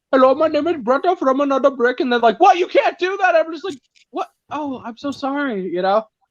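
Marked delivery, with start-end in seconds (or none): 0.1-2.0 put-on Indian accent. Speaker shows the accent people say can't be done, Indian accent. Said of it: "I'm really good at an Indian accent".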